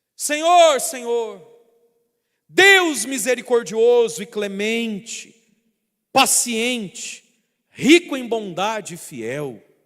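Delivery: high, loud, slow, drawn-out shout. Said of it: "Moisés então começou a gritar".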